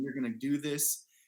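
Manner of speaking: put-on stern, confident voice. Retelling what a mother said before a climb: imitating a stern confident mom. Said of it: "it was like a stern mom concern".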